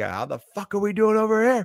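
very high, surly bartender voice, barking. Describing how a male bartender ought to sound: surly male bartender voice. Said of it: "where he has to be kind of like".

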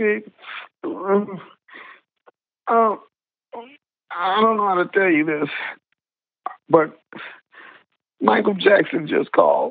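play-acted startled, high, on the verge of tears. Retelling what his wife said on the phone, imitating someone near tears. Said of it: "she's almost in tears".

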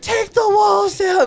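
mock, very high-pitched screaming. Retelling a woman screaming at people holding the tent: imitating someone screaming. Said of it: "She's screaming".

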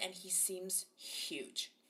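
soft, amazed whisper.

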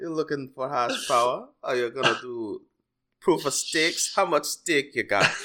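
Jamaican island accent throughout. Doing a joking bit in conversation, in a mock Jamaican accent. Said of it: "apologize to the entire island of Jamaica".

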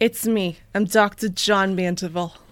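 put-on Brooklyn accent. Reading a part on request, as Dr. John Mandeville in a Brooklyn accent. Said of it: "Read it in the Brooklyn accent".

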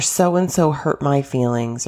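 ordinary talk

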